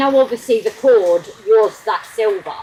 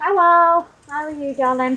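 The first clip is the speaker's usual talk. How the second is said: sweet-talking, pitched-up voice; 6 semitones higher than usual. Greeting someone, in a higher-pitched voice. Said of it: "I don't know why my voice went higher then".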